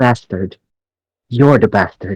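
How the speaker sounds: angry, fuming delivery. Answering the armed men in character, roll for intimidation: angry voice. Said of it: "anger fuels from your voice".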